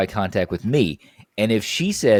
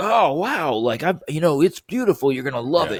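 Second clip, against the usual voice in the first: all-excited, enthusiastic, high-pitched gushing; 6 semitones higher than usual. Retelling a coworker's reply to news of a wedding in Italy: imitating someone excited. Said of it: "he was all excited".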